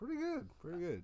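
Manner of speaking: high-pitched, casual, chatting voice. Answering how he's doing when greeted, in a high-pitched voice. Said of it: "I like the high-pitchedness in your voice".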